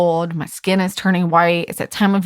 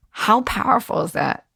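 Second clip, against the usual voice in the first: choked-up voice catching, on the verge of tears; 2 semitones higher than usual. Sharing a personal story with listeners, choking up. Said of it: "I'm about to cry".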